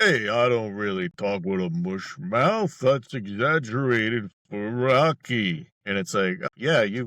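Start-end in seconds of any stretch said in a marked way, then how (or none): 0.0-5.7 clearer, less mushy, carefully enunciated voice. Describing an actor on a talk show, doing a Sylvester Stallone impression. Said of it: "in real life, he's like".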